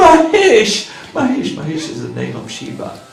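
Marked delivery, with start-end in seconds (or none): 0.0-0.9 loud, high scream. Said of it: "He screams out".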